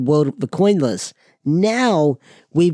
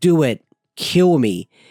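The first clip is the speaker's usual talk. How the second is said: put-on crying, much slower. Retelling a fight scene, voicing Matt's plea to Tommy, imitating Matt crying. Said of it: "crying to Tommy".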